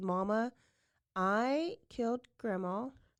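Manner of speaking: normal talking voice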